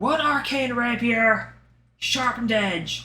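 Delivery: high shout, called out loudly across a distance. A narrator voices a character who stamps a requisition form and turns back, shouting out. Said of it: "and shouts out".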